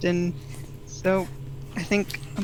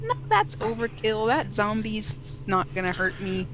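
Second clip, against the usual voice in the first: ordinary talk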